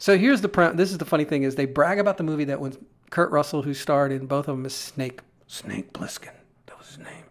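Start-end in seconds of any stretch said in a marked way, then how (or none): 5.5-7.2 soft, unvoiced, tough badass whisper. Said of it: "He talked like this".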